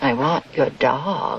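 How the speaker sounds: very low, mean storybook-villain voice. Quoting a mean banker's line from a movie: Wizard of Oz tones. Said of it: "Again, Wizard of Oz tones".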